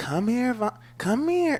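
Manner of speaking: light, easy, gentle calling voice. Showing the right inflection for calling a kid over: light calling voice. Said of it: "the right inflection in your voice ... the light voice".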